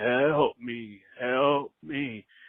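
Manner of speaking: ghostly, disembodied moan. Retelling a voice heard calling for help while going up, imitating a moaning voice. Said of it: "this moaning voice saying".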